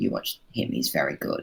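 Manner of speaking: soft, confiding whisper. At a stadium, speaker recalls a tip to a friend, retelling a whisper. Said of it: "I whispered to my friend".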